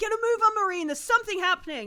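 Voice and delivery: shrill, very high-pitched yelling. Voicing a captain shouting up to a Marine above: captain shouting up. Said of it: "you hear the captain shout up to you".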